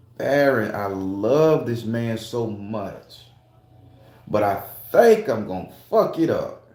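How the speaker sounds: ordinary talk, nothing marked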